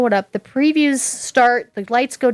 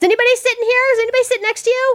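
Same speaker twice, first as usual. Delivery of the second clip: high, fast, pushy mock woman's voice. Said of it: "This woman is, like, whacking me".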